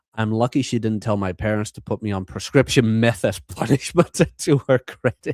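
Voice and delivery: talking while cracking up, laughing through words. Recounting a school story, laughing while talking. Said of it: "Sorry I'm laughing about this".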